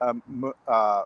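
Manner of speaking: stumbling, stuttering speech.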